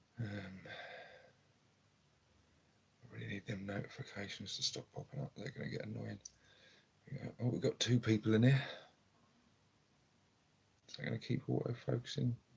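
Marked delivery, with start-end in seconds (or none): 0.2-6.2 soft, hushed, very quiet speech. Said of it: "very quietly".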